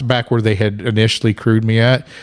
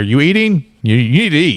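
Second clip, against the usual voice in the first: cross, high-pitched, angry voice; 4 semitones higher than usual. Retelling mile eleven, quoting Kevin's push to eat, imitating Kevin, mock-angry. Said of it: "I sound so angry?".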